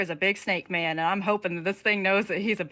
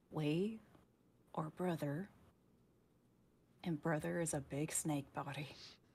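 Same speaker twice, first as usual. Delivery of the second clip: very quiet, soft, hushed voice; 5 semitones lower, 16 dB quieter than usual. A player's character backs up a little before speaking, very quiet. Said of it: "just very quietly say".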